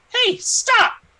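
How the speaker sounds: very high, tiny, shrill, loud calling voice. Game narrator voices an unseen figure calling out to travelling players; small-sounding voice. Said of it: "you hear a small sounding voice".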